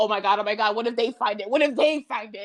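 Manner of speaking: frantic, panicked, completely losing it. Retelling a story of a man finding the corpse gone, acting out panic. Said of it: "he's like losing his fucking shit".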